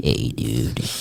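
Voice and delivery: very low, hushed, warped, eerie dad voice. Describing hearing Dad's voice from your room, an off version of Dad's voice. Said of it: "you kind of hear Dad's voice, but it's like".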